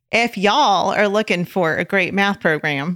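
put-on Oklahoma accent. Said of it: "Let me start that over".

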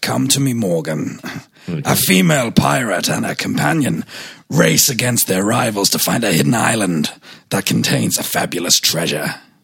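low, polished, well-spoken gentleman pirate voice. Asked for a well-spoken pirate, voicing the pirate story pitch: well-spoken Frank Langella pirate. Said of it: "more well-spoken pirate".

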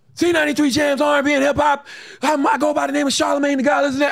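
mock screaming DJ voice, very high. Recalling his old voice tapes, the speaker is retelling his old yelling. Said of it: "But I was really yelling".

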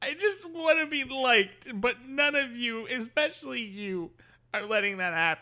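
very high, weeping through every word. Acting out a character giving a speech, crying while speaking. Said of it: "he's crying as he's giving his speech".

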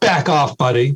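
put-on American Southern accent. Voicing what chirping birds would say if translated, in a Southern accent. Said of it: "with a Southern accent".

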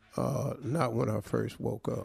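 slow, creaky, dry delivery. Answering a sports question in a mock interview: Bill Belichick impression. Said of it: "I'm gonna answer 'em as Bill Belichick".

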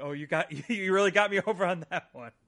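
very loud, high, acted, absolutely delighted gushing. Retelling a wrestler's delighted reaction to a catchphrase: imitating Mankind's delight. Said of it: "to Mankind's absolute delight".

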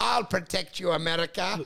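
action-hero voice with a Russian accent. Imagining a movie where Tom Cruise plays a Russian hero: Tom Cruise in Russian accent. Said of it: "a Russian accent going like".

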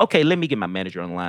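put-on deep, very low, serious businesslike voice. Retelling answering a client's offer: imitating own serious corporate tone. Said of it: "I got all serious".

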